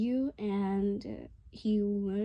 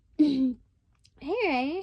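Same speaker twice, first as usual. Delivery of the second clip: tiny high-pitched voice, slightly loud; 6 semitones higher, 6 dB louder than usual. Telling a story, the speaker voices Emma greeting Ray at the door; Emma's little high-pitched voice. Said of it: "Emma's voice is like a little high pitched".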